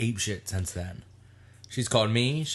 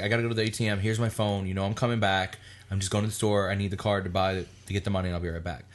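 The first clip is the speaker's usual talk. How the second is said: normal talking voice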